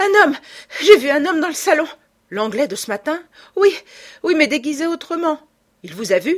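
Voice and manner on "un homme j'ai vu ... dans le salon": gasping, stuttering, very high and loud. Césarine rushes in from the farm to tell Lupin; breathless stammering. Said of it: "Suffoquée, à bout de souffle, Césarine bégaya".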